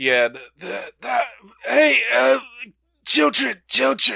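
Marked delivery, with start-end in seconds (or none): 1.0-4.2 put-on very high, raspy, croaky old woman voice. Asked to redo an earlier voice, speaker attempts it in a croaky old woman voice. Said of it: "the croaky old woman voice".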